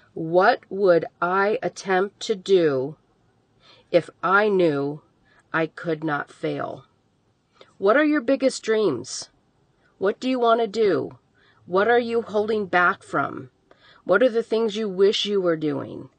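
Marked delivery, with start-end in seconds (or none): 0.2-6.8 measured, slow, deliberate reading, each word spaced out. A speaker rereads a question so listeners can write it down, reading slowly. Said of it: "I'm going to read that slowly again".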